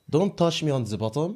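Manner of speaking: convincing, well-done put-on French accent. Doing an accent game, saying the line given: French accent. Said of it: "Wow, that was good".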